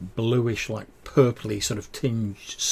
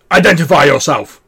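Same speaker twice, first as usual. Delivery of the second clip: very loud, high, strange dwarf shout; 5 semitones higher, 14 dB louder than usual. Voicing a dwarf stepping forward with an axe: strange dwarf voice shouting. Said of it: "in this strange dwarf, and he shouts out".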